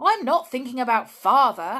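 high, loud crying out. George answers Julian's reassurance, crying out. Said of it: "cried George".

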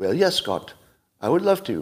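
fake Indian English accent. Voicing an imagined robot dog answering scott's question, in a put-on indian accent. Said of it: "That was an Indian accent".

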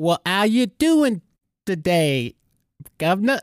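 high, clumsy, bad, put-on Cockney accent. Podcast host greeting his co-host, in a bad fake Cockney accent. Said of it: "We apologize to all of our English and Cockney-speaking listeners".

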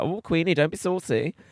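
high, slow, put-on old-film Cockney accent. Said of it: "nobody ever spoke like that".

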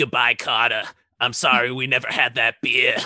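put-on Boston accent. Retelling a scene to friends, quoting a woman's goodbye in a boston accent. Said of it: "She's just like, Boston".

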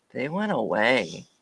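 low, hushed, creepy serial-killer delivery. Retelling how a man answered, in an almost serial-killerish way. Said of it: "almost serial killerish".

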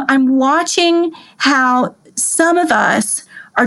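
ordinary talk, nothing marked

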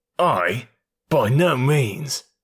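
rough, harsh, jerky, halting delivery. A man answers the banker's accusation, rough, jerky voice. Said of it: "in a rough, jerky voice".

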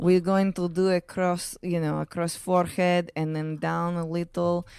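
put-on thick Russian accent. Retelling what the Botox provider said: imitating a thick Russian accent. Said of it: "she had a thick Russian accent".

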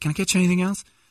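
chirpy, upbeat waitress voice pitched very high. Retelling a sushi dinner, the speaker quotes the waitress: imitating an upbeat waitress. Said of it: "Very, upbeat".

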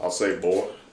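put-on cartoon rooster character voice. Trying the impression that was asked for: Foghorn Leghorn voice. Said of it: "can you do a Foghorn fucking impression?".

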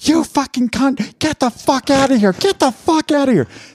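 acted furious yelling. Acting out a business owner suddenly snapping at a guest: acting out furious yelling. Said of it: "I'm gonna start yelling".

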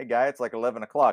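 put-on mild Midwestern accent. Imitating a guy who came home every day, in his little Midwest accent. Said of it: "with his little Midwest accent".

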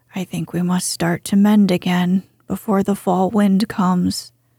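ordinary delivery

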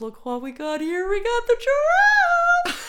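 very high, very loud shrill puppet voice. Pretending to call kids to a giraffe puppet show: high-pitched puppet show voice. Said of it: "you have to go high".

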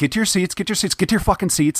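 acted domineering dictator voice. Retelling a film character ordering people back to their seats: imitating a totalitarian attitude. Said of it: "very, uh, totalitarian type of attitude".

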